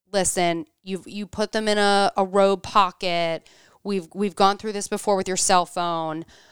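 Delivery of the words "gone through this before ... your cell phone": normal talking voice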